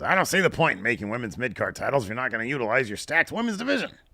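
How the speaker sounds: put-on crotchety, grumpy old man voice. Reading a viewer's chat message aloud: grumpy old man voice. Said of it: "I read it like a grumpy old man".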